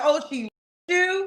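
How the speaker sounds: acted-out heavy, ironic sarcasm. Retelling an earlier reply to the other speaker: imitating own sarcastic remark. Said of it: "So sarcastically, I said".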